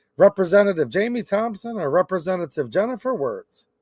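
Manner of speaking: ordinary talk, nothing marked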